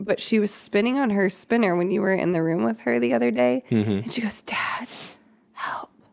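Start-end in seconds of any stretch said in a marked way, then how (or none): 4.4-5.9 put-on whisper, much quieter. Father recalls his daughter's words to someone who was there, retelling a whispered plea. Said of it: "Like whispered it".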